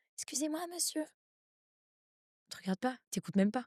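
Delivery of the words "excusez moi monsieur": tiny, high-pitched cartoon little-girl voice. Picturing a cartoon little girl addressing a big man, tiny little girl voice. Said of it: "la toute petite fille avec la toute petite voix".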